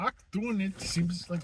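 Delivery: bad German accent drifting into Indian accent. Playing a doctor in a filmed scene, with a failed German accent. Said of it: "I was going for a German accent".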